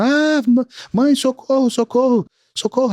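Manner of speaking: put-on high, drawn-out little-girl screaming. Retelling how a daughter ran out to her mother: imitating a daughter screaming. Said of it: "a filha que saiu gritando".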